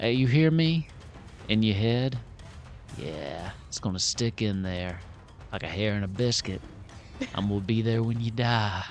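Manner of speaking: plain, soft, hushed, close whisper. A game master voices a spell heard only inside a character's head: whisper. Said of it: "just kind of whisper that they can hear".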